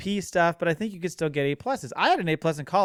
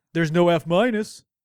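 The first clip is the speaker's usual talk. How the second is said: louder, mocking put-on dumb voice; 5 dB louder than usual. Stating the other speaker's argument for them: imitating in a dumb voice. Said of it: "in that dumb voice that I just used".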